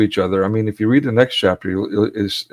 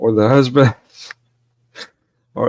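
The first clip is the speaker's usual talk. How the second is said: talking while laughing and giggling. Reading a legal text aloud, laughing while talking. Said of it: "I'm sorry, I'm laughing".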